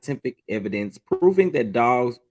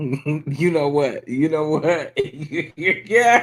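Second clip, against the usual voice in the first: talking through laughter, higher; 4 semitones higher than usual. Reacting to a question about someone's name, laughing while talking. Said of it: "why are you laughing?".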